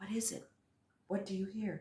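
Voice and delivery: very quiet, hushed, low-pitched voice. Listening for a hidden sound beside her, the companion asks, low voice. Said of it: "asked in a low t- voice".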